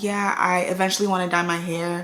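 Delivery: normal talking voice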